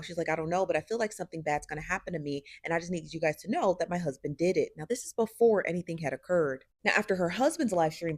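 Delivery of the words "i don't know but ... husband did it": normal talking voice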